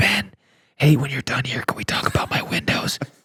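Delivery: sneaky, hushed, breathy whisper. Asking a hypothetical about a funeral: imitating someone whispering. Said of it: "someone whispers".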